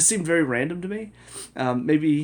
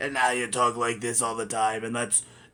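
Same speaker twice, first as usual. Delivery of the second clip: put-on gravelly old voice. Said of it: "obviously he doesn't have a New York accent".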